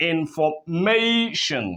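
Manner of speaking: information with stress on third syllable -ma. Pronunciation lesson on word stress: stress on third syllable of information. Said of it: "that is manifested here in the third syllable. If you go back to pronounce it again, you notice that it sounds this way".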